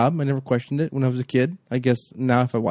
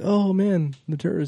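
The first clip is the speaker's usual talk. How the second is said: frightened, high, put-on American accent; 6 semitones higher than usual. Praising a favorite movie scene, imitating Hans Gruber's mock-scared fake American accent. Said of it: "has the fake American accent. And he's like scared".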